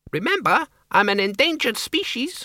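very high, squeaky bat voice. Reading a novel, voicing a bat about to be thrown, squeaking. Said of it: "the Count squeaked".

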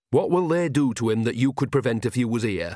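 ordinary delivery

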